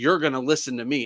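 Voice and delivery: acted angry outburst. Retelling a confrontation, quoting the person who got aggressive: imitating an angry person. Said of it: "starts getting violent and angry and aggressive".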